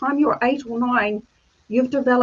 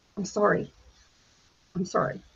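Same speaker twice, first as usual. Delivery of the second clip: mock barely-there whisper, choking up; 4 semitones lower, 8 dB quieter than usual. Retelling how the guys on TV stopped their stories: imitating someone choked up. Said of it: "and get really choked up".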